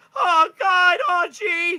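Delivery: shrill, loud, pitch way up, drawn-out character voice. Game master voicing a small companion in a player's pocket: Morty-like voice. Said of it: "He kind of sounds like Morty".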